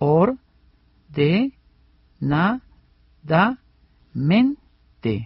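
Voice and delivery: slow, syllable by syllable delivery.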